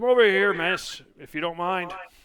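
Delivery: high, yelled call across a distance. Game master voices a guard calling a player over, guard yelling. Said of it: "he yells".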